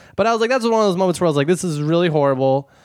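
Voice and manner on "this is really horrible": ordinary delivery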